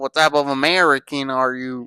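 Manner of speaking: ordinary talk, nothing marked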